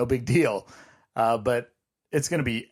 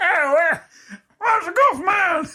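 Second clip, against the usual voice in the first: put-on strained comic voice, higher and louder; 6 dB louder than usual. Joking about a Disney visit, saying the line in Bobcat Goldthwait voice. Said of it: "But in Bobcat voice".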